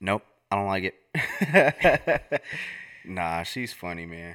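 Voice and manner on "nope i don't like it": high, slow, flat delivery with laughter. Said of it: "She was like".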